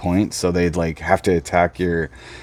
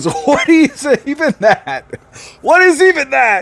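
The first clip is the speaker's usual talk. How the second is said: put-on very high-pitched, shrill, drawn-out angry old man voice; 6 dB louder than usual. Retelling the older man's angry reply to a bearded kid: imitating a mad older man. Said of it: "And he's all mad".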